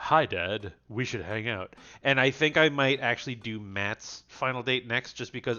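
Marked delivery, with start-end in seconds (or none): 0.0-1.7 put-on deeper voice. Narrating a dating story, the speaker voices an incoming message: Joseph's deeper voice. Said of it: "doing the deeper voice with Joseph".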